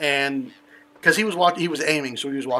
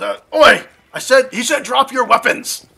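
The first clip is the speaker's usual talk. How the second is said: yelling, higher, louder, slower; 9 semitones higher, 8 dB louder than usual. Game master voicing an armed man taking aim at a player, yelling. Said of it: "he yells".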